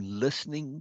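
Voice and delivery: strong stress on the word listening. Quoting another speaker's line back to her, stress on 'listening'. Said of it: "Emphasized listening".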